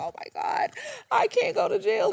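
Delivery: put-on crying. Retelling a woman facing police over a stolen card, imitating her crying. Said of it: "she starts crying and she's like".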